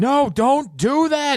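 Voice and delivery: shrill, high, very loud yell. Narrating a game scene, voicing a character who tries to stop you: yelling. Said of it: "Carmine is yelling".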